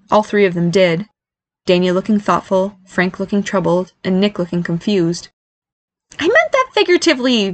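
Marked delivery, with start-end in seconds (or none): 6.2-7.5 sudden, very high-pitched exclaimed outburst. Reading Barry's line after all three of them look at him; exclaimed. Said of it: "Barry exclaimed".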